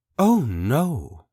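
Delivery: mildly appalled, lightly horrified, drawn-out "no". Reading a story aloud, a woman refuses another house: lightly horrified voice. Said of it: "in a lightly horrified voice".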